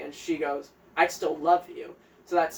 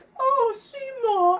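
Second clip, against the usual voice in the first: put-on shrill, very high-pitched old English lady voice; 6 dB louder than usual. Describing a stage character, imitating an old English lady: old English lady voice. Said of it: "old, like, English lady".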